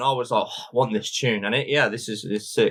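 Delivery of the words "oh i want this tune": normal talking voice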